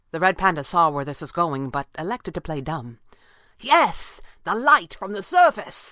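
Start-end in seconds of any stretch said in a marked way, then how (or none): 3.5-5.9 eager, excited exclamation. Pavli answers the red panda in the mask, crying out excitedly. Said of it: "Pavli cried excitedly".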